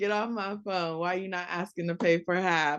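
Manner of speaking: play-acted sassy voice with full attitude. Retelling what a guy said in a funny video: imitating a sassy tone. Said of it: "It sounds so sassy".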